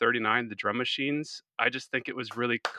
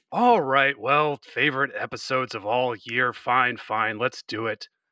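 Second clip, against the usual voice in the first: put-on exasperated voice, louder; 5 dB louder than usual. Doing an impression of Adam Z for the others: exasperated Adam Z impression. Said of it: "Exasperated right from the start".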